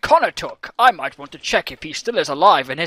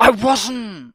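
irritated, annoyed, pitched-up delivery; 6 semitones higher than usual. Denying a teasing claim from another player: annoyed. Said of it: "why you're getting so annoyed about it".

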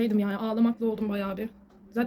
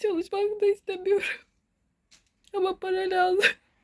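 crying, higher pitch; 9 semitones higher than usual. Speaker admitting to being depressed, crying involuntarily. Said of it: "Şu an istemsiz ağlıyorum şu an".

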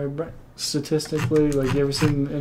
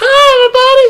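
very high, shrill, loud squealing voice; 14 dB louder than usual. Imitating the greeting of a card-game content creator: Saffron Olive voice. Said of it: "Like that voice".

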